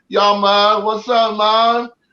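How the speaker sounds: very slow, drawn-out, put-on Jamaican accent. Retelling a stranger greeting him in a restroom, imitating a jamaican accent. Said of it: "try to talk to you with a Jamaican accent".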